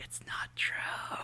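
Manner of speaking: soft, slow whispering voice. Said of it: "she's, like, whispering".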